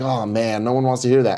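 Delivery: ordinary talk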